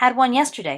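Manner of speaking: in an offended huff.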